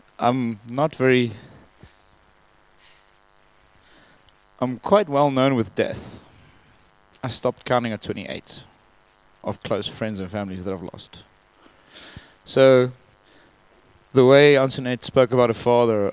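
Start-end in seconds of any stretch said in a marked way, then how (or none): 0.2-11.3 tearful speech, weeping through the words. Explaining to listeners the reason they are crying: crying while speaking. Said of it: "the reason why I'm crying is".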